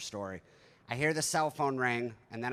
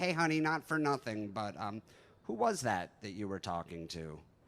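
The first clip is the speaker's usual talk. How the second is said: forced casual tone, acting cool; 2 semitones lower than usual. Retelling asking her who she was talking to, mock-casual, acting cool. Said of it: "cool about it".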